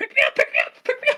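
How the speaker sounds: very high, repeated pleading scream, imitated. Retelling a movie scene where a stranger jumps into the road: imitating someone screaming. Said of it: "he's screaming".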